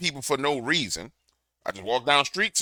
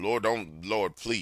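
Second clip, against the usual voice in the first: put-on pleading voice, lower and quieter; 6 semitones lower, 10 dB quieter than usual. Retelling a prayer asking the lord to spare the family: imitating own begging prayer. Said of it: "I beg him".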